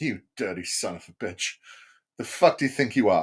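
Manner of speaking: contemptuous, scornful, sneering tone. Voicing religion looking someone up and down: voicing religion sizing you up scornfully. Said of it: "it just looks you up and down every time it sees you and it goes".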